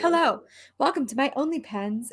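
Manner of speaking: mock seductive host voice. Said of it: "She's like".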